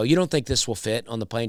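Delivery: ordinary delivery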